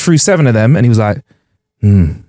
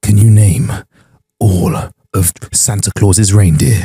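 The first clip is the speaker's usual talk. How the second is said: low, very slow, drawn-out drawl; 5 semitones lower than usual. Retelling a man at a bar who turned around to ask, Severus Snape voice. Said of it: "he sounded like Severus Snape".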